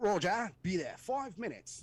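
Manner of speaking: put-on slow, unhurried British accent, high pitch. Retelling a call with troops in contact and a guy answering, british accent. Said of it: "He's got a British accent".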